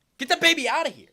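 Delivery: mock very high, very loud furious shout. Telling about a crying baby at the movies, retelling an angry yell. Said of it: "I'm losing my mind".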